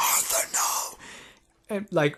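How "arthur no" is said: light, mild, contained, sketched-out scream. Retelling how a character screams when someone is killed: imitating a scream. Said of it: "she screams like".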